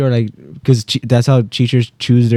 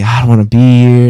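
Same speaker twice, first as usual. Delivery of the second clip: tearful crying voice, louder; 5 dB louder than usual. Retelling crying as a little kid on the first school day: imitating own childhood crying. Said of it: "and I'm bursting tears".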